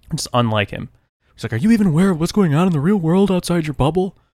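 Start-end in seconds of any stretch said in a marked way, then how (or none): 1.5-4.1 very high-pitched, frantic, panicked outburst. Retelling a phone call from dad, who was panicking: imitating dad panicking.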